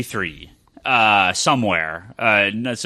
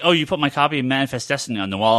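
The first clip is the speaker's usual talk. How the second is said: normal talking voice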